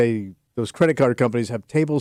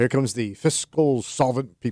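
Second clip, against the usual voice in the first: ordinary talk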